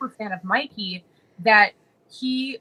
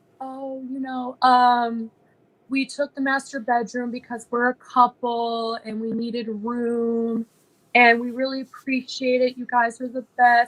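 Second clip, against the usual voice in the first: gentle, soft, slow put-on voice; 3 semitones higher than usual. Retelling how Mikey talked to the mom: imitating Mikey's soft voice. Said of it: "soft voice".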